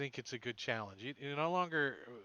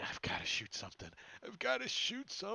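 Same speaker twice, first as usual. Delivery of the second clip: eager, restless, sing-song, pitched-up voice; 7 semitones higher than usual. Voicing a character reloading his crossbow, eager to shoot. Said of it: "reloading his crossbow and going".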